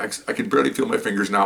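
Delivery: ordinary talk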